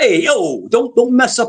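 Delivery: put-on very high-pitched Italian-style accent. Imitating another speaker's sudden Italian sound: imitating an Italian Goomba voice. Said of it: "You sounded like a Goomba out of nowhere".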